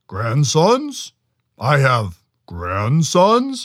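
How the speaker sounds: loud, big, swooping roaring monster voice. Narrator reading the Chenoo answering Noka through the lodge door, roaring Chenoo voice. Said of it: "roared the Chenoo".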